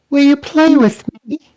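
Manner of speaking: put-on small girl's voice, very high. Narrating a spellcasting scene, the speaker voices an unseen presence behind the party: little girl voice. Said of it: "you see this little girl".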